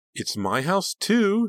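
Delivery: very high, loud, scornful, drawn-out sneer. Narrator voicing Sarah answering her sister Delia, who grabbed her arm: sneering. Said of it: "she sneered".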